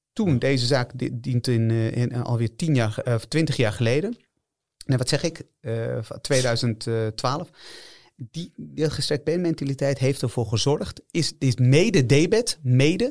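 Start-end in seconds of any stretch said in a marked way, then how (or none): 11.1-13.1 mede stretched out slow and rising. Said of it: "om nadruk op mede".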